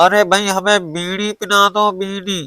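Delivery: pinched, nasal voice with the nose held shut. Imitating how someone spoke, as if with the nose closed: blocked-nose nasal voice. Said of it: "जैसे कि हम नाक बंद कर लें इस तरह से हम कहें".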